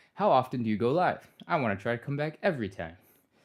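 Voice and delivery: heavily sarcastic read-aloud tone. Streamer reading a viewer's chat question aloud, reading it sarcastically. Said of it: "I read that with such a sarcastic voice".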